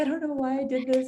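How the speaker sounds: acted tearful, weepy, crying voice. Act out the call a woman made to you after joining the business, imitating someone crying. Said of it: "she called me like crying".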